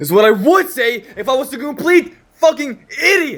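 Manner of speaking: very high shout, rising throughout. Speaker addressing the audience about lust, yelling. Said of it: "I'm sorry for yelling at you".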